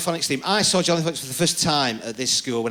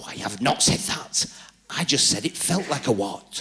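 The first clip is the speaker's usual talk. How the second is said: put-on hushed, loud whisper; 3 semitones lower than usual. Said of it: "in that sort of hushed whisper you can still hear".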